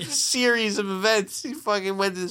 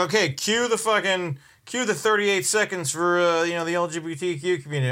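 ordinary talk, nothing marked

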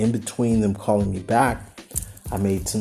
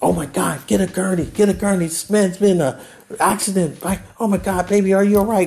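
mock panicked, frantic voice, pitched much higher; 10 semitones higher, 5 dB louder than usual. A man retells arriving at the emergency room, imitating panicked nurses. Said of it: "They just panicked".

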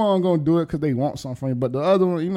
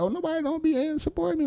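very high, blubbering crybaby whine while crying; 12 semitones higher, 5 dB quieter than usual. Mocking artists who don't put work in: imitating someone crying. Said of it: "they be crying like".

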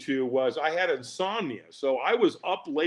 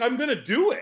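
put-on excited, enthusiastic delivery, higher pitch; 8 semitones higher than usual. Retelling how a buddy announced a firewalk: imitating Dan's enthusiastic tone. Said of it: "he said it with this enthusiasm".

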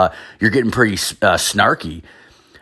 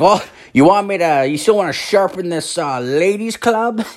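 put-on very high, snide, snarky old-man voice; 11 semitones higher than usual. Retelling what an old man said to him in front of people, mimicking a snarky old man. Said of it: "said it in a very fucking snarky old man way".

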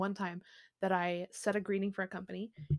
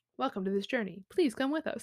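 polite phone customer service voice; 3 semitones higher than usual. Welcoming podcast listeners, the host slips into a customer service voice. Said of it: "reminds me of my customer service voice".

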